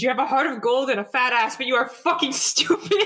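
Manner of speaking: blunt, reproachful scolding tone. Voicing Estrella grabbing Marrow's shoulders: voicing Estrella scolding Marrow. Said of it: "Estrella grabbing Marrow's shoulders".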